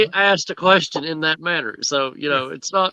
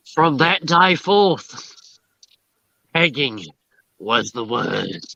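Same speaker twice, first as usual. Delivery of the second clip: put-on Australian accent; 3 semitones lower than usual. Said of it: "It's like Captain Jack Aussie".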